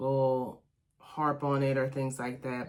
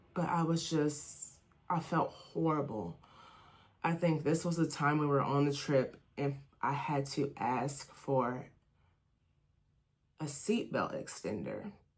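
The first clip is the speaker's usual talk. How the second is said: choking up, fighting back tears; 4 dB quieter than usual. Sharing a painful memory from a family trip, choking up. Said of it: "Sorry. give me a second".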